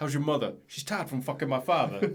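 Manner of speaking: put-on Boston accent, movie-line delivery. Asked for a Boston accent, the speaker quotes The Departed in a Mark Wahlberg Boston accent. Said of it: "Can I do a Boston accent?".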